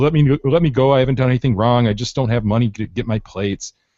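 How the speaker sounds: normal talking voice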